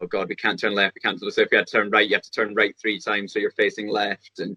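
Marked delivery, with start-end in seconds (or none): none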